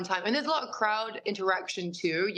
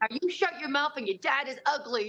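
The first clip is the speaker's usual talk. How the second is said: mock, jokey, playful, teasing shouted yell; 6 semitones higher than usual. Retelling yelling again at a little girl in the crowd: retelling yelling at someone. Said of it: "I'm gonna yell at you again".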